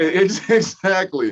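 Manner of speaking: high, loud laughing delivery.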